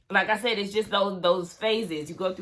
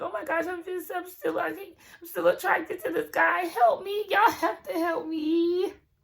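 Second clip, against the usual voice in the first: put-on tearful crying plea, very high; 10 semitones higher than usual. Retelling what a woman said after she starts crying: imitating a woman crying. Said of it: "And then she starts crying".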